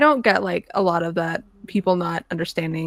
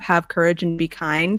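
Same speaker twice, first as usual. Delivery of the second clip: normal talking voice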